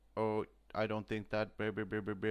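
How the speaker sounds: monotone computer voice, flat text-to-speech robot. Mocking a film's doctor who sounds typed into text-to-speech, in a text-to-speech robot voice. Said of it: "he has the robot voice".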